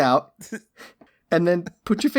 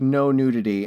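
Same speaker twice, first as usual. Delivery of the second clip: ordinary talk, nothing marked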